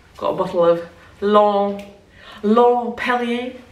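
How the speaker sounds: very slow, drawn-out put-on French accent. Setting up a recorded shot, then asking if the accent is good: French accent. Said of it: "Is that a good accent".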